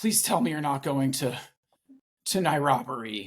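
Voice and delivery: mock-terrified, frightened pleading. Recounting what an aunt said to the speaker, imitating terrified aunt. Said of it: "like she was so terrified".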